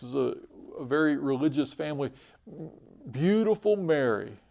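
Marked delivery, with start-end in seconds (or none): 3.1-4.2 mock cutting, bitter, biting sarcasm. Retelling how a woman spoke of her sister: imitating a biting tone. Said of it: "she would say in kind of a, a biting tone".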